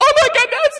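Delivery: very high, loud, squealy voice. Speaker retells a girl seeing a surprise guest walk into her prom: high squealy voice. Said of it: "in her high squealy voice".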